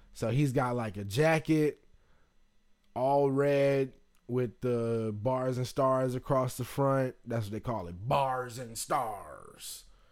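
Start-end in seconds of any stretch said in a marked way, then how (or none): 8.0-9.8 sea-dog pirate voice. Speaker describing a man's flag jacket, naming its design: pirate voice. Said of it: "I know I kind of sounded like a fucking pirate right there".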